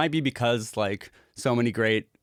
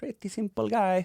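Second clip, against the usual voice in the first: very high, vague, put-on Swedish accent; 10 semitones higher than usual. Wrapping up for the group, slipping into an accent he guesses is Swedish.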